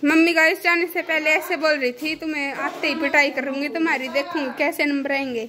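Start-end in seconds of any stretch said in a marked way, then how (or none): none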